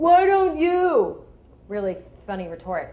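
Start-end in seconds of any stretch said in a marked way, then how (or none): 0.0-1.2 very high, shrill, loud yell. Retelling an argument with a man two rows up on a plane, retelling a yell. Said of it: "he yells".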